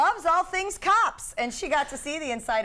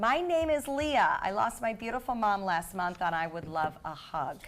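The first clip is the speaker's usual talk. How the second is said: plain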